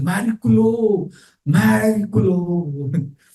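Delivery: put-on thrilled, high called-out cry in Italian accent. Recounting a dying man's last words, retelling an Italian-accented shout. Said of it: "in his Italian accent, Italian language, is shouting".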